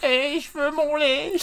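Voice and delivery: nasally voice. Retelling a scene, the speaker quotes a character in a nasal voice. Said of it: "avec une voix nasillarde".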